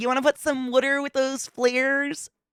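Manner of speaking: strong put-on Baltimore accent, pitched way up. Showing how friends' parents on the East Coast talked: imitating a strong Baltimore accent. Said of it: "all had that strong Baltimore accent".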